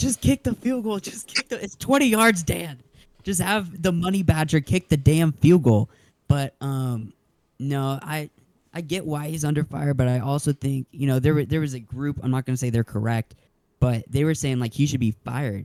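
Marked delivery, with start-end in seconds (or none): 0.0-5.9 put-on pitched-up screaming and yelling. Retelling screaming at the tv during the game: retelling own screaming at tv. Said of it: "I was screaming at my T V".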